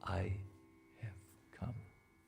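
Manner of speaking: very hushed, soft and gentle voice. A storyteller voicing the Lord appearing to Tulsidas, Lord Ram's very soft voice. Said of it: "in a very soft uh, voice, Lord Ram said".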